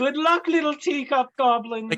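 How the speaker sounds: very high-pitched, loud yelled call. A game player's character calls out to the goblins, shouting. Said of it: "Lark's just gonna shout".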